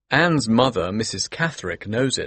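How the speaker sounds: ordinary delivery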